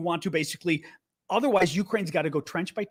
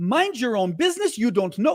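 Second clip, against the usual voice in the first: line read in a put-on Russian accent; 4 semitones higher, 3 dB louder than usual. Reading out a troll's one-sentence message, in a mock russian accent. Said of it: "difficult not to use a Russian accent".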